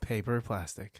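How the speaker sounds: low, very quiet, withdrawn delivery. During a filmed take directed by Mr. Nolan, the delivery getting quiet. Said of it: "Why are you getting quiet".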